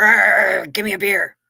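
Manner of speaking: put-on bear voice. Telling a joke where a bear walks into a bar: bear character voice. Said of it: "the bear says".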